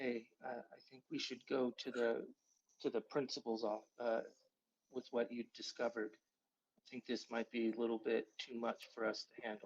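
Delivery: quiet whispering. Playing a scene, the speaker has their character whisper to another character. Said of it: "I would whisper to Victor".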